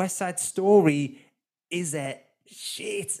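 slow, high, forced out through gritted teeth. A podcast host signs off a film review episode; through gritted teeth. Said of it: "I say through gritted teeth there".

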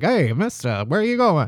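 put-on old-film-style mid-Atlantic accent. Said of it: "That mid-Atlantic accent".

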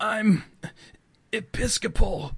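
weak, high voice with feeble coughs through the words. A young priest slammed against a wall by an old man replies, weak and coughing. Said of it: "he coughs weakly".

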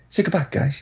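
breathy, whispered movie-star voice. Repeating the other speaker's sign-off: Mark Wahlberg impersonation. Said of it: "It was like your Mark Wa-, Wahlberg impersonation".

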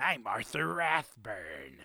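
swooping 1990s cartoon villain voice. Introducing a man whose name sounds villainous, in a 1990s cartoon villain voice. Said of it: "He sounds like a villain in like a 1990s cartoon".

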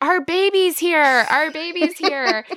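screaming. Telling the story of getting out of the waterway, retelling own screaming. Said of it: "And I'm screaming".

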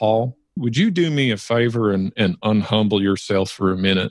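put-on Southern accent with drawled vowels. Retelling what a man said to him, in a southern drawl. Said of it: "he says to me in his southern drawl".

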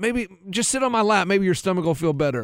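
ordinary delivery

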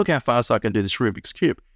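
ordinary delivery

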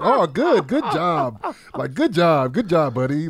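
high, sing-song, gushing, drawn-out motherly doting tone. Retelling mom's reply to news he made his flight: imitating mom praising. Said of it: "She was like".

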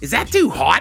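put-on Pittsburgh accent. Opening the podcast episode and asking about the light, in a Pittsburgh accent. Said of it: "Hear that Pittsburgh accent".

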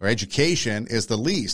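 stress on least with a falling tune.

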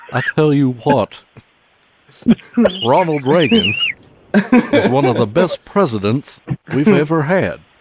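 loud, high-pitched Texan drawl. Imagining what a Texas guy would say, Hank Hill impression. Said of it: "the Texas guy is like a Hank Hill type".

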